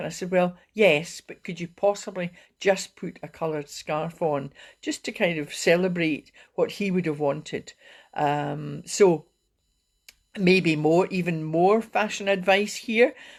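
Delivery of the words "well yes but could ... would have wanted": ordinary talk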